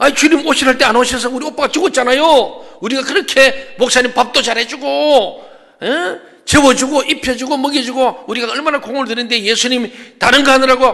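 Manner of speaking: high-pitched, loud, indignant protesting tone. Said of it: "예수님께 항의한 겁니다".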